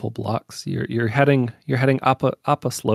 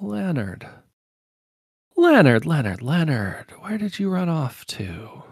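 higher-pitched female voice; 6 semitones higher than usual. Voicing a hooded woman who falls in step beside the player: voicing a cloaked woman. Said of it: "and she's like".

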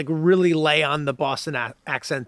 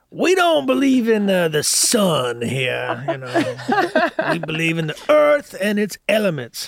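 over-the-top, exaggerated put-on Southern accent, sing-song; 3 semitones higher than usual. Performing a character from the episode, in a southern accent. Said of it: "I love that you do that accent".

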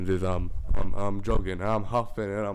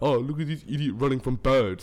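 mock-laughing, jeering taunt; 4 semitones higher than usual. The speaker retells how people fishing at the jetty pointed and laughed, imitating mocking laughter. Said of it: "they're just laughing at me".

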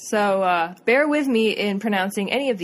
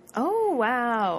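put-on, fake, acted surprised tone; 3 semitones higher than usual. Reacting to news already known, acting all surprised. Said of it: "I'm acting all surprised".

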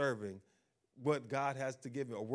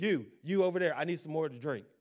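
loud, harsh, bossy and demanding voice; 3 semitones higher, 6 dB louder than usual. Acting out a proud person talking to staff: imitating harsh talk to staff. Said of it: "why are you talking so harshly".

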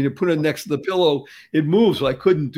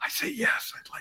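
weak, strained, barely-there whisper. Retelling answering a nurse from a hospital bed: imitating barely being able to speak. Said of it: "I could barely speak, by the way".

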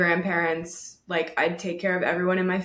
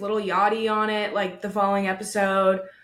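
ordinary talk, nothing marked

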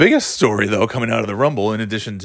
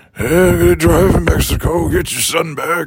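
put-on ancient, very old man voice, pitched up higher; 7 semitones higher, 4 dB louder than usual. Joking about an actor who is very old, imitating his talk: Clint Eastwood voice. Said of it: "hearing Clint Eastwood talk".

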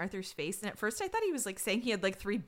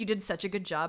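ordinary talk

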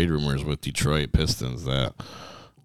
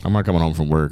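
ordinary talk, nothing marked

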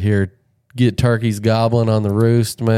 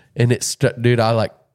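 usual speaking voice

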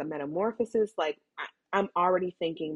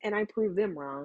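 usual speaking voice

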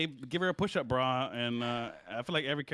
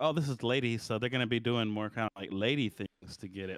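plain

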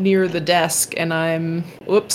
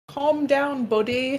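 British accent, pitched higher; 7 semitones higher, 3 dB quieter than usual. Asked on the spot to do a Bisping accent, answer in a Bisping British accent. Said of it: "My beautiful British accent".

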